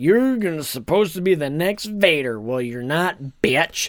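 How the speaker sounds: put-on mocking villain voice. Retelling a film scene where Snoke mocks Kylo: imitating Snoke mocking. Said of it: "really mocking him".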